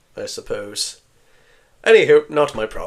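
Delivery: put-on character voice of an elderly elf. Voicing an old elf dismissing the adventurers: old elf voice. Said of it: "the old elf narrows his eyes and just goes".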